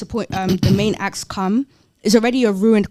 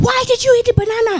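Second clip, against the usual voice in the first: mock screaming, very high-pitched; 3 dB louder than usual. Retelling how the promoter reacted to the banana: imitating someone screaming. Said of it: "started screaming".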